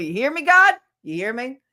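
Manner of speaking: yelling loudly. Calling out to God about wanting to succeed: yelling. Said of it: "I'm yelling just so you hear me".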